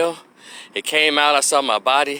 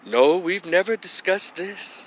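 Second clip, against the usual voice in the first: gentle, hushed, very soft, pitched-up voice; 5 semitones higher, 4 dB quieter than usual. Retelling what the father's wife said to him: imitating a very soft voice. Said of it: "in a very soft".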